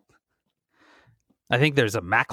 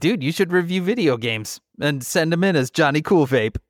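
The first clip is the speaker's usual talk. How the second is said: ordinary talk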